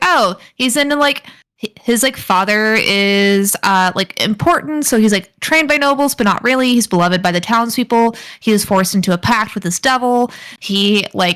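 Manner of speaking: plain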